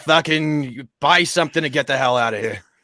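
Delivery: put-on goblin character voice. Describing a goblin NPC smoking a cigarette, speaking in a goblin voice. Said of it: "a snippet of maybe a goblin".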